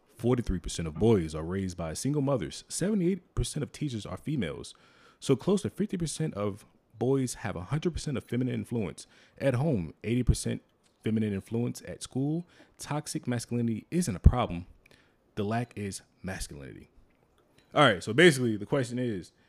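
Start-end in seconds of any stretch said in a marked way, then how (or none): 0.2-16.9 narrator voice, slower narration-style reading. Reading a social media post aloud to listeners in a narrator voice. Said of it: "let me get my narrator voice on".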